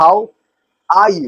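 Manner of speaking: 'are' hit with stress. Teaching how to say how are you, stress on 'are'. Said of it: "आर पे आपको जोर देना है".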